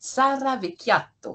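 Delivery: Italian accent on the name. Saying the listener's name as italian colleagues advised: italian accent on the name. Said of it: "je me suis entraînée à dire votre nom avec un accent italien".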